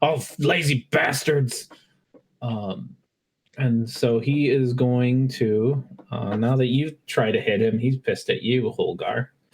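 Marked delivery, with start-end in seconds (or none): 0.0-1.7 put-on bugbear monster voice. Voicing the bugbear when no helpers answer his whistle: voicing the bugbear. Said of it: "He's just like".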